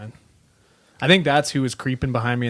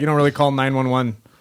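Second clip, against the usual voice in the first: ordinary delivery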